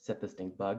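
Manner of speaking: ordinary delivery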